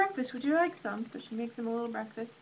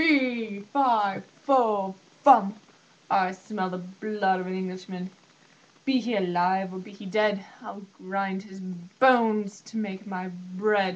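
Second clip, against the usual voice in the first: big, deep, slow, thundering booming giant voice; 4 semitones lower than usual. Telling the story of Jack, the giant enters the room: booming giant voice. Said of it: "into the room booms a big giant".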